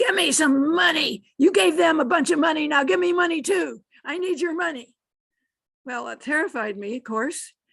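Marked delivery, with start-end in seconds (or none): 0.0-4.9 wild, high, loud shriek. Retelling what a man running at the speaker shrieked: retelling a shrieking man. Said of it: "he was running and he was shrieking".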